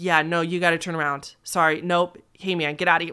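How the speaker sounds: ordinary talk, nothing marked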